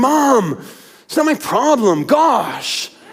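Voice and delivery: put-on, exasperated, high, very slowly stretched out. Imagining a son's reply to his mom, imitating an exasperated son. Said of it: "in his most exasperated voice".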